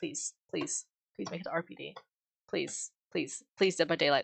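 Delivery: desperate, pleading, begging tone. Begging the game to load the RPD map: desperate begging. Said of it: "I'm begging".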